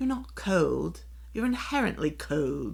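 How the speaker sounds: put-on, fake British accent. Redoing the line after being asked if that was a british accent: fake british accent. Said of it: "Let me do it over again".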